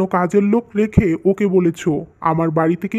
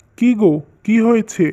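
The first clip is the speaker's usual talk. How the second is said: usual speaking voice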